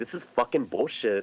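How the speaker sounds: ordinary talk, nothing marked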